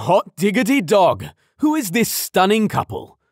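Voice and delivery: big hearty booming shout, pitched high. Narrator reads Thomas greeting Nash and Fiona at their car; booming exclamation. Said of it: "Thomas exclaimed".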